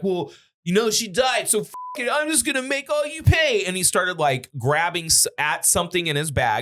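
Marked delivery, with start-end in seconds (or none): 0.0-3.6 mock, high-pitched drunk man ranting voice. Retelling what a drunk man in a movie theater said: imitating a drunk man. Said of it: "A drunk dude was like".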